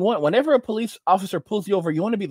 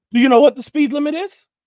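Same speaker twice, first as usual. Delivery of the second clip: furious, loud, high-pitched screaming bark; 7 semitones higher, 7 dB louder than usual. Retelling a traffic stop where the trooper started screaming: imitating a cop screaming. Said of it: "he starts screaming at me".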